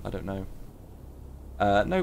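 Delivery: ordinary talk, nothing marked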